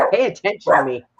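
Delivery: voice of a pet as if it talked. Speaking for the other speaker's pet: voicing the pet. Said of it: "she's just like".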